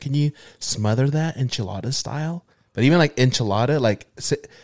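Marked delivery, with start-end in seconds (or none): 0.0-2.4 "order" said with plain English pronunciation. Retelling ordering food at a restaurant: imitating ordering in an English way. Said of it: "but I'll say it in English".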